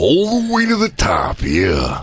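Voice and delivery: put-on voice, dragged out slowly.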